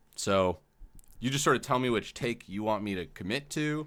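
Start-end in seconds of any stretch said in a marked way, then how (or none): none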